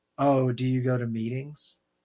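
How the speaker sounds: mock grave pitying tone. Sober speaker imitating people who ask about meetings: mock-grave, pitying tone. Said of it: "They say it like you're you're dying".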